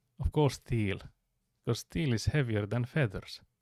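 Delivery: put-on Scottish accent. Retelling a streamer's clip, voicing the man's answer in a Scottish accent. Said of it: "The man saying in a Scottish accent".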